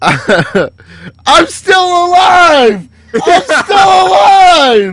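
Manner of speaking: very high, very loud, slow, drawn-out rising scream. Retelling a teammate screaming into voice chat, imitating someone screaming. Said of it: "he starts screaming".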